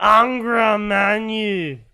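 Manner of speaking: loud shout with the final word drawn out. Reading a paragraph about the Empire aloud, shouting Angra Manu. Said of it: "I have to shout this out loud".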